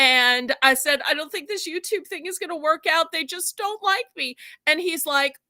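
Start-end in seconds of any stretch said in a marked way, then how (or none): 1.1-4.4 mock upset, high, tearful crying voice. Retelling a voice call from the first month: imitating own past crying. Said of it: "and I was crying, crying, crying".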